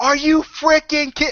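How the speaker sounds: mock, very high-pitched, outraged shriek. Retelling walking out of a dorm room late at night, retelling own screaming. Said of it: "I'm freaking screaming".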